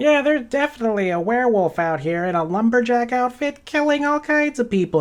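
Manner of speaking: put-on chipmunk critter voice. Retelling what the chipmunks tell them, in a chipmunk voice. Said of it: "that's not a very good chipmunk voice".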